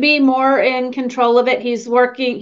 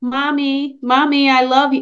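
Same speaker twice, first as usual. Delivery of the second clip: put-on childlike, small young girl voice. Retelling what a man said right before he fell over, imitating a little girl's voice. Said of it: "he was talking like a little girl".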